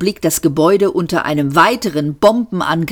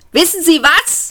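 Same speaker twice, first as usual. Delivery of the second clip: very high, loud yell; 12 semitones higher than usual. Seyfort reaches the man and is yelling into his ear. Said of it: "brüllte ihm Seyfort ins Ohr".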